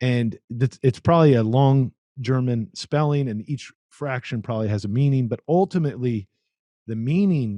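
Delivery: ordinary talk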